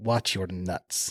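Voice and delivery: put-on heavy Russian accent, laid on thick, low. Retelling what the man on the gurney said before being lifted, thick russian accent. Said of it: "The guy had a thick Russian accent".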